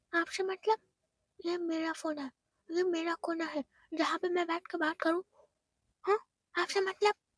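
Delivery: irate, heated, full of anger. Narrator voicing a girl snapping back at her grandmother, shouting angrily. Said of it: "तुम इतना चिल्ला क्यों रही हो?".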